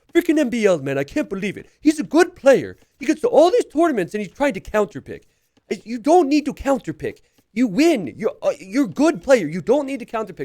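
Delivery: loud, very high, going-on-and-on rant. Retelling Hart's rant about a player, doing a Hart impression. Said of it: "I'm gonna do the P G version".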